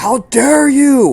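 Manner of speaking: shrill, very loud, very high creature screech. Voicing a creature whose friend was just hit, shrieking. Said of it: "he shrieks".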